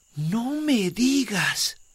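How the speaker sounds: astonished, very high-pitched, surprised cry. Narrating a children's tale, voicing the sun reacting to the moon: surprised. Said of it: "Dijo el sol sorprendido".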